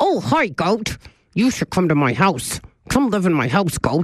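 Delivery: silly, bleating goat-like voice. Retelling what they said while at the goats, in a put-on goat voice. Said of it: "this is what I was doing, my goat voice".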